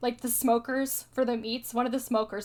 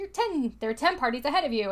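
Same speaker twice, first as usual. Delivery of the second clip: ordinary talk, nothing marked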